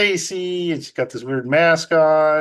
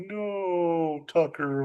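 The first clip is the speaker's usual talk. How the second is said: mock slow-motion cry on "no", quieter; 8 dB quieter than usual. Retelling a movie scene where she chases a runaway dog: imitating a slow-motion cry. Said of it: "She goes in slow motion".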